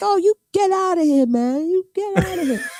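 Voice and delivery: very high, scornful, dismissive ranting tirade. Recounting a tirade aimed at them, the speaker quotes Ness: mock rant as Ness. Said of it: "Like really being disgraceful".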